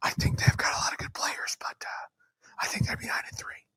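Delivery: secretive, hushed whisper, barely voiced. Predicting a team's season record, whispering so as not to seem biased. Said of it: "I'm whispering".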